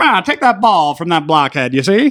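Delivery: put-on old-fashioned movie-style voice. Acting out how they used to talk back then: old-timey voice. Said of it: "because they had the old timey voice".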